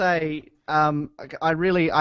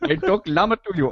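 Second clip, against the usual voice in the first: put-on Indian accent, higher; 3 semitones higher than usual. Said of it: "It usually goes Indian Tony".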